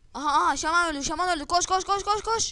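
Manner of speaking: high, loud, excited shouting.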